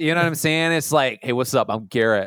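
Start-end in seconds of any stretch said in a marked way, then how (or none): 1.2-2.3 typical douchey jock hockey bro voice. Explaining why the character's name was chosen, doing a Garrett voice. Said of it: "it's that kind of voice".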